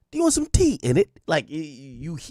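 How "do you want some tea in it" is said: put-on very high, posh, proper British accent. Mocking how people from London talk: imitating proper London talk.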